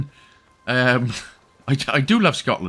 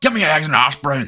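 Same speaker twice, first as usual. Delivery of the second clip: put-on, laid-on north-of-Scotland accent. Joking about sounding like ordering breakfast in northern Scotland: put-on Scottish accent. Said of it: "sounded like I was ordering breakfast then".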